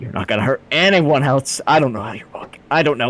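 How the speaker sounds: halting, exasperated, frustrated stammer. Voicing a character mid-attack, frustrated stuttering mutter. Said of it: "he mutters beneath his breath".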